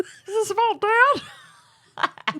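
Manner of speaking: put-on very high puppet-like girl voice. Mimicking how the other speaker voiced the daughter in a story, Beaker-like voice for the daughter. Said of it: "the daughter Beaker from the Muppets?".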